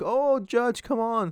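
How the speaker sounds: put-on very high, weepy, drawn-out, pleading crying whine. Mocking criminals in court with heads down: imitating criminals crying. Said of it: "crying like".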